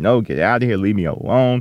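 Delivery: ordinary delivery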